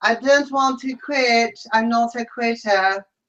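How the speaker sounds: put-on Mexican accent, laid on thick. Act out Peely announcing it on Big Brother Canada, as a Peely impression in a Mexican accent. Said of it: "It's a Mexican accent".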